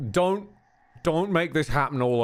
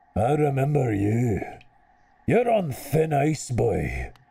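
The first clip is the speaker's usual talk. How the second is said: slow, deliberate, put-on Scottish accent. The speaker voices a character in a Scottish accent impression. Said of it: "which end of the Scottish impression this vo- this voice comes from".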